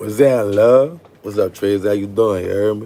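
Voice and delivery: put-on streetwise tradesman voice, charming and flirty. Retelling calling someone back, the speaker puts on his trade voice. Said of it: "I put on my trade voice".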